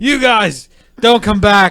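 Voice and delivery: very shrill, booming, drawn-out holler. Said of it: "And yells at somebody else".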